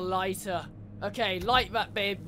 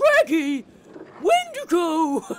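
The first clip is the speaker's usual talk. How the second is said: cartoon dog voice, higher and louder; 8 semitones higher, 7 dB louder than usual. Speaker doing a voice for the group's dog: Scooby-Doo impression. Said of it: "that's the best Scooby-Doo impression I've got".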